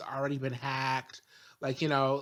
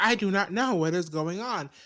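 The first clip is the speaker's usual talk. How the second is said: robotic voice, pitched a bit higher; 5 semitones higher, 4 dB louder than usual. Retelling a scene where Penny falls out of the sky: robotic Penny voice. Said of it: "she's saying it robotically".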